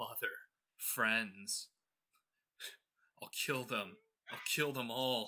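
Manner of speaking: sobbing, broken-up words forced through weeping. Narrating the scene, voicing Guardian trying to speak, sobbing. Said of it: "you hear just sobbing".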